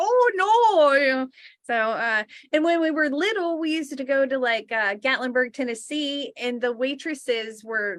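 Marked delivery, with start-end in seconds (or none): 0.0-1.3 put-on loud Wisconsin-style accent with drawn-out no. Retelling picking up an accent after watching a movie: Fargo movie accent. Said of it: "and then I had that accent just".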